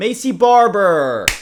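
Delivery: triumphant, high, loud, drawn-out shout.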